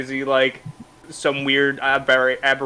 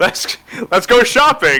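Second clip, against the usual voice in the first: eager, keen, enthusiastic, loud and pitched up; 7 semitones higher, 7 dB louder than usual. Voicing Johannes for the group, in an enthusiastic voice. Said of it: "In like an uh, enthusiastic voice".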